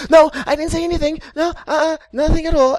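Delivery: very high, very loud, chirpy, perky voice. Retelling a game character's quick denial: imitating Aya's perky denial. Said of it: "that attitude and the perkiness of, of denial".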